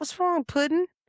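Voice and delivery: put-on very high, sweet, motherly Southern accent. Retelling what a very good friend, Kim Burney, asked, imitating Kim Burney's Southern accent. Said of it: "very Southern".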